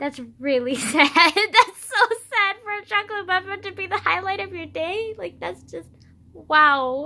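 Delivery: talking through laughter. A high schooler talking about their day, laughing while talking. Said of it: "I'm just laughing at how pathetic my life".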